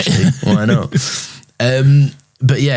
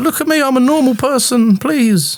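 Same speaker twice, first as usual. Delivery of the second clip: drawn-out female voice, pitched way up. Recapping a scene and voicing a woman's plea, high-pitched woman voice. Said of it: "I'm assigning a high pitch voice".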